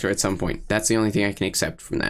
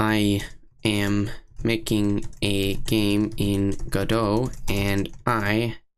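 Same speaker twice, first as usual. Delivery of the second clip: very slow, flat, monotone robot voice. Reading aloud a question typed to ChatGPT, in a put-on robot voice. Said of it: "I try to talk in a robot voice".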